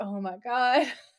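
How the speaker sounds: mock weary, long-suffering, at-the-end-of-rope exasperation. Retelling how the director reacted to an outtake: imitating a long-suffering director. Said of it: "The director sounds so long suffering too".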